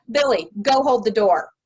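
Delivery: clear, firm, orderly voice. Showing how an adult might tell a child to hold the door: orderly, commanding tone. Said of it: "That sounds very orderly".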